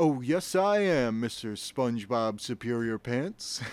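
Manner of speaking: loud, slow, drawn-out, insistent delivery. Retelling a cartoon scene, answering SpongeBob: imitating Patrick Star. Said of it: "And he's like".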